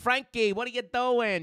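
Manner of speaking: put-on Long Island accent. Speaker imitates his mom calling his name, in a Long Island accent. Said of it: "they're very Long Island".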